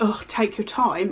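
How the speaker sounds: quiet mumbling, muttered under the breath. Retelling what a classmate said while she reached for a pen: imitating someone muttering under his breath. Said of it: "under his breath".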